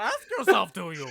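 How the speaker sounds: very loud, bellowing little alien creature voice. Riffing on a wrestling match line: Yoda voice. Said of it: "He turned to Yoda".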